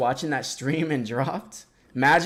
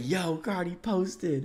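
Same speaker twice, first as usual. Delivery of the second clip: mock flipped-out, freaking-out exclamation; 4 semitones higher, 7 dB quieter than usual. Retelling a phone call about a post: imitating someone flipping out. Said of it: "He was flipping out like".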